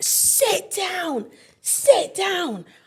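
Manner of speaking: put-on, drawn-out, very high, slow pleading tone. Retelling a car crash, husband grabbing her arm: imitating husband urging. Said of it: "He grabs me by the arm and he's like".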